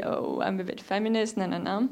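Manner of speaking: ordinary talk, nothing marked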